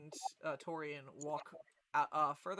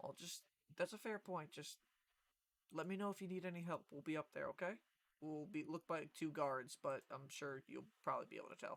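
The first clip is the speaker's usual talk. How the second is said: soft, secretive half-whisper; 6 dB quieter than usual. Voicing a companion who answers the party in character: half-whispering. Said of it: "just whisper".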